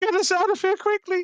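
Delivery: very high, loud, piercing scream. Role-player voicing a character screaming up the corridor to the others. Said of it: "she's screaming up the corridor".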